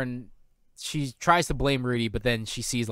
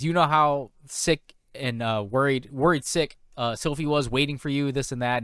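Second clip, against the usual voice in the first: usual speaking voice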